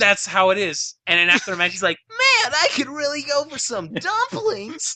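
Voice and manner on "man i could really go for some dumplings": terrible, very high, drawn-out sing-song voice. Describing a game character after a match, the speaker imitates the character's bad voice. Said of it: "his voice ... sounds as bad as I just did".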